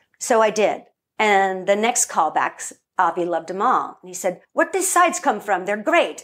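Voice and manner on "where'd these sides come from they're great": quick, clumsy, really bad put-on Israeli accent. At the next callbacks, retelling what Avi said, as Avi in bad Israeli accent. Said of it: "that's my really bad Israeli accent".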